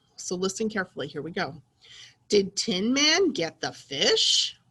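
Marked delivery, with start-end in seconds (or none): 2.3-4.5 rising, asking tune climbing on fish. Lesson on reading sentences with a question mark: question intonation on 'fish'. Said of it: "it sounds like I'm asking a question".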